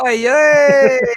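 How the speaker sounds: high, loud hype shout, belted out.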